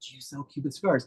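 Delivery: soft, hushed whispering voice. Speaker retells a question asked in an empty shop: retelling a whisper. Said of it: "but I was whispering".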